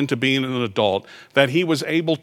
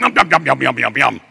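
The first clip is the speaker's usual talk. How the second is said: put-on monster voice, louder; 4 dB louder than usual. Retelling the car navigation voice after a direction, in a Cookie Monster voice. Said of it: "download the voice of Cookie Monster".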